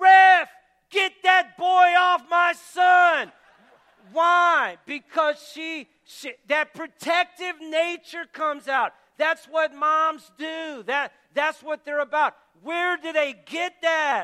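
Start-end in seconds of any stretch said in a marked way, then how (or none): 0.0-3.3 very loud, high, drawn-out yell. Retelling a mother in a packed gym during a timeout: imitating a mother yelling. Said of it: "she's yelling at the top of her lungs".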